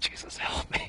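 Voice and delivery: soft, unvoiced, desperate whisper. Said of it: "you might have just yelled, it's like".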